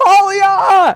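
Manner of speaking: crying out in tears. A tabletop player voices his character calling out, crying out in tears. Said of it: "crystals coming out of his eyes".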